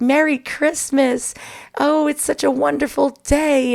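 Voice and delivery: phony, high-pitched, falsely cheerful delivery. Mocking relatives' holiday greetings: imitating false holiday cheer. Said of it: "had that false".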